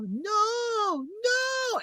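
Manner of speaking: very high, soft tiny voice, drawn-out no. Retelling what he said during a movie, in his little voice. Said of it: "he would go in his little voice".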